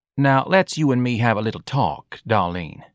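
usual speaking voice

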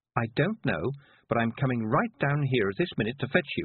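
ordinary delivery

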